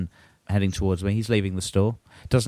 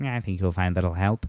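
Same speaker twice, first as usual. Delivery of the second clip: put-on very nasal voice, faster; 3 semitones lower than usual. Retelling what a man said instead of offering help: imitating a very nasal voice. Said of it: "very nasal".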